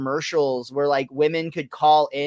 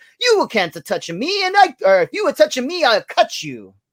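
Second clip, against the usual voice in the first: put-on very high, swooping Italian accent; 9 semitones higher, 4 dB louder than usual. Retelling a scene where Homer sees a pasta-box mama come alive; very Italian Mama Celeste accent. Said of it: "in a very Italian accent says".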